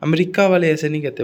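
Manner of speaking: ordinary talk, nothing marked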